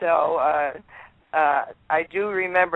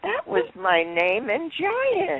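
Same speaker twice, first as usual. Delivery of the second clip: put-on childlike voice, higher pitch; 8 semitones higher than usual. Retelling what Elizabeth Taylor said on first meeting: Elizabeth Taylor's childlike voice. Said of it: "she always had that childlike voice".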